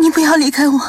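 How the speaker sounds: shaken, frightened, very high-pitched begging tone. Xian'er, huddled in his arms, speaks to him: still shaken with fear. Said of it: "惊魂未定地说".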